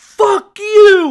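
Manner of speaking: piercing, high, shrill, full-volume scream. Retelling how someone rolled down a car window and screamed: imitating Marcus screaming loudly. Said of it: "just screams".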